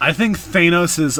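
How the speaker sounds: ordinary talk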